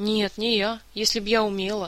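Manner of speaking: plain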